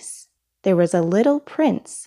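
plain reading voice

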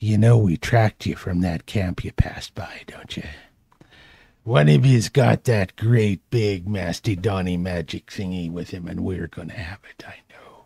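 quiet, threatening stage whisper. Narrating a game, the attacker readies his maul over a prone character, whispering in her face. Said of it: "whispering with his foul breath right in her face".

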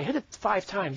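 usual speaking voice

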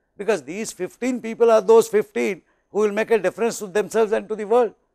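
ordinary delivery

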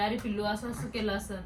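ordinary talk

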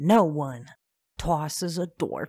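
put-on loud Brooklyn accent slipping in by mistake. Voicing a character while playing a game with friends, the line slips into an accidental Brooklyn accent. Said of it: "What am I, from Brooklyn?".

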